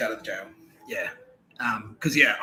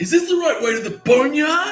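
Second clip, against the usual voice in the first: super loud, very high-pitched blurted delivery; 6 dB louder than usual. Retelling what you asked someone who stopped you on a walkway: super loud. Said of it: "I said it like fucking super loud".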